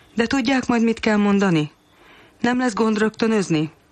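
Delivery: slightly worried. The narrator replies to a plan to act out roles on tape, a little worried. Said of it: "Aggódtam egy kicsit válaszként".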